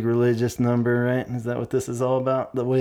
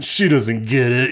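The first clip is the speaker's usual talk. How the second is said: put-on raised, snotty kid voice; 4 dB louder than usual. Retelling own reaction to a teacher's note: imitating a snotty kid. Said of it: "a snotty kid's like".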